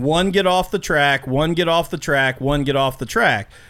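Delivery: normal talking voice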